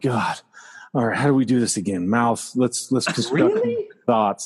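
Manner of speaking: tired, drained voice straining for words. Imitating the other speaker struggling to put thoughts into words: imitating someone tired and struggling. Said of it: "because you sound tired".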